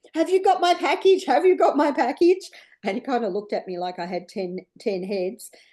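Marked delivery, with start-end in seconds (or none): 0.1-2.5 put-on very high, shrill, desperate screaming. Retelling running next door to a neighbour: retelling screaming at a man. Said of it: "I'm screaming at this man".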